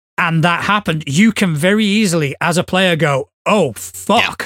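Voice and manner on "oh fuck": plain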